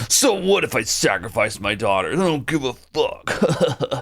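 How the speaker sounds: put-on callous, evil villain voice. Mocking a game villain who sacrifices his daughter: mock uncaring Domon voice. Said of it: "a boring, evil villain that's just like".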